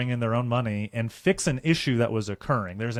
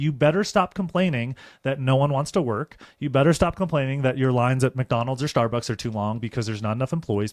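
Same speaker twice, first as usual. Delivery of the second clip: ordinary delivery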